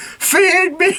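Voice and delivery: very high, all-out, shrieking scream. Retelling your own shout while playing a game, retelling a scream.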